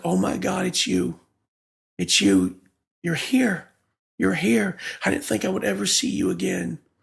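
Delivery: put-on, overwhelmed, swooping tearful sobbing cry. Retelling the mother waking up and seeing them: imitating mother bawling. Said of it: "she starts bawling".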